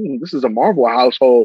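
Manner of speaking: put-on child voice, almost disgusted. Retelling a son's reaction to a friend's answer: imitating a disgusted child. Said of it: "almost disgusted".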